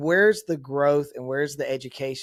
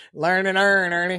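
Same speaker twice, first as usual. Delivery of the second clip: put-on rural country accent, loud and high; 5 semitones higher, 5 dB louder than usual. Retelling the team's slogan in a country accent. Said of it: "in my country accent".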